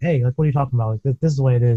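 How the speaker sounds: blunt, rude, heated tone. Retelling own reply to girlfriend, imitating own rude tone. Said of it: "it kinda comes out as, like, maybe, like, a rude tone".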